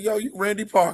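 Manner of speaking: voice like a DJ. Retelling how a man greeted Randy Parker, in a DJ Nasty voice. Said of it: "In that DJ Nasty voice".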